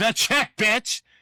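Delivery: sudden, high, screamed outburst. Retelling how a tired colleague answered a question about motivation, retelling a scream. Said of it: "he just literally screamed".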